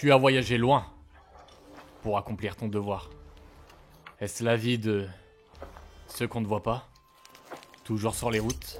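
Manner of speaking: put-on grave character voice, deep and loud. Trying out a line in a put-on deep voice. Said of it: "Je vais la tenter avec une voix grave".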